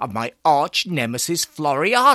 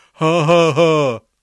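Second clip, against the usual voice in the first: gleeful chortling, louder; 6 dB louder than usual. A character reacts to the narrator's statement, chortling. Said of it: "Botson chortled".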